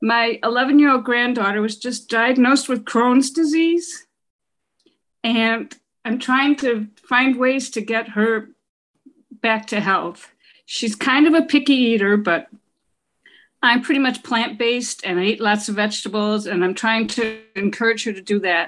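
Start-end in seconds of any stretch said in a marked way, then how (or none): 0.0-10.3 emotional, heartfelt, earnest tone. A grandmother asks the doctor about her granddaughter's crohn's disease, emotional. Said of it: "I'm kind of emotional right now".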